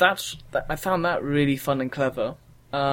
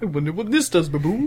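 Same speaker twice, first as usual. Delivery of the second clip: put-on cartoon bear character voice; 3 semitones higher, 3 dB louder than usual. Retelling a friend puzzling through a game, giving Luke the Yogi Bear voice. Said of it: "I gave him the Yogi Bear voice".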